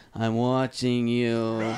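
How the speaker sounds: nasty heavy smoker's voice. Retelling a woman saying she has been watching them, in a nasty smoker's voice. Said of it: "one of those nasty smoker's voice".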